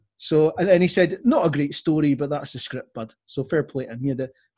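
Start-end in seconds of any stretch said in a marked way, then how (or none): none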